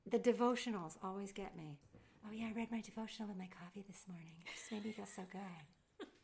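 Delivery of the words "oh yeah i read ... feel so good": very soft, hushed, contented gushing voice. Mocking people who feel good after their devotionals, doing an impersonation of someone. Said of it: "You're doing an impersonation of someone".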